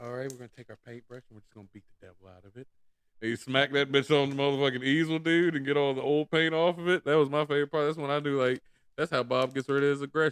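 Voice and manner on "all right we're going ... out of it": very quiet, hushed voice. Retelling a favorite TV painting moment: Bob Ross impression. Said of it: "my fucking favorite part of fucking Bob Ross when that motherfucker was like".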